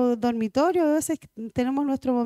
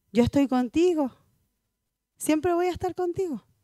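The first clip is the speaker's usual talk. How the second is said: mock gentle, sweet, tender voice; 3 semitones higher than usual. Voicing the Lord speaking to a believer: put-on sweet tender voice. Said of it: "quiere hablarte con, con dulzura, con ternura".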